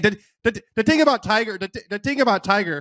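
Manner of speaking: put-on high Irish accent. Imitating how McGinley says the thing about Tiger: McGinley Irish accent. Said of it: "it's just Irish, but that is a good McGinley impression".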